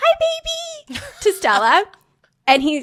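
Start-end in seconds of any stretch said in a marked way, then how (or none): 0.0-1.0 put-on very high, cutesy baby-talk puppy voice. Speaker retells greeting Stella on coming home, in a puppy voice. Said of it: "in puppy voice".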